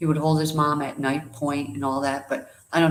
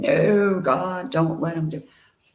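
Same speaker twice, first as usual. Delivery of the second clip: put-on slow, stretched-out, scared child's crying scream; 3 semitones higher than usual. Retelling being a scared four-year-old at the hospital: imitating a child screaming. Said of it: "And I'm screaming".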